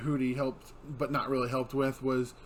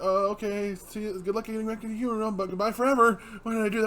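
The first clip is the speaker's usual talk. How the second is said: put-on nervous character voice, pitched higher; 8 semitones higher, 3 dB louder than usual. Retelling how Amity says goodbye to Luce: imitating a nervous Amity. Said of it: "so nervous".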